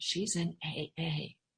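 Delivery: half-whispered, hushed, drawn out very slowly. Retelling a mother's answer to relatives asking about her: imitating a half-whisper. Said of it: "my mother would say in a whisper".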